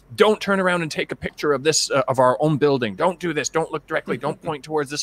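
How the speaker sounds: stern, strict, firm official-sounding tone. Recalling a trip, the speaker imitates a man laying down rules in a strict voice. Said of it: "comes in with a really strict voice".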